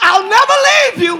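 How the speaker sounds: near-shout, very loud and high-pitched. Quoting god's promise never to leave you: about to shout. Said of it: "I'm about to shout".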